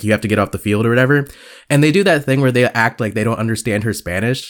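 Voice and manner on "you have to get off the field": normal talking voice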